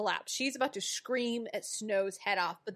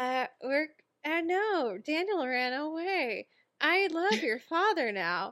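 put-on forced, unconvincing cheerfulness, higher; 5 semitones higher than usual. Acting out a scene where Regina badly fakes happiness: imitating Regina's forced, unconvincing happiness. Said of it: "a death mask over her face, or she's like".

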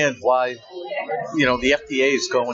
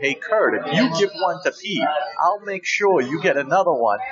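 ordinary delivery

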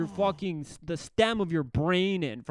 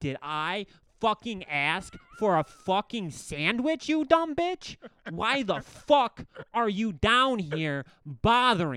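mock furious, raging, swearing tirade; 3 semitones higher than usual. Retelling how a man went off at a woman who brought him a sandwich, mock angry rant. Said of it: "and he's going off".

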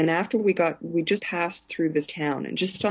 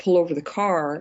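usual speaking voice

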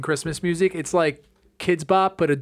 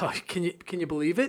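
mock exasperated, impatient, huffing woman's voice, quieter; 7 dB quieter than usual. Retelling an impatient woman in a return line: imitating an exasperated huffing woman. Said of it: "huffing and puffing and, like, looking at me like".

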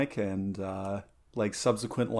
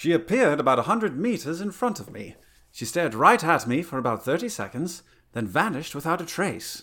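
attempted English accent, pitched up; 6 semitones higher than usual. Asked by a co-host to read a witness's sighting account in his best English accent. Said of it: "if you just want to nail this with your best English accent".

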